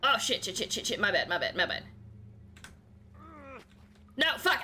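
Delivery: frantic, fast, rattled-off panicking string of words. Climbing together in a game and slipping: panicking. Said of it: "I'm panicking!".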